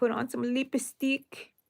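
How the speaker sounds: put-on light Spanish accent, high-pitched, small voice. Retelling what grandma used to tell her: imitating grandma's little spanish accent. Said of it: "in her little Spanish accent".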